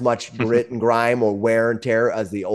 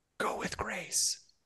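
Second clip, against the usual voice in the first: whisper, quieter, higher and slower; 9 semitones higher, 16 dB quieter than usual. Narrating a woman who backs away and speaks only to you, whispering. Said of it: "and she whispers to you".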